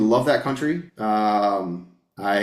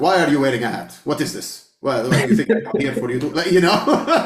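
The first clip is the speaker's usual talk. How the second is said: put-on heavy, thick Lebanese accent; 4 semitones higher, 3 dB louder than usual. Speaker describes how his mother would greet a podcast guest: imitating a thick Lebanese accent. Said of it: "in her thick Lebanese accent".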